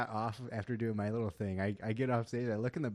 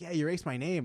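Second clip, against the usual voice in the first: angry, accusing, pitched-up tone; 6 semitones higher than usual. Retelling a confrontation with a much shorter man, imitating an angry man. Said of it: "looking up at me, angry".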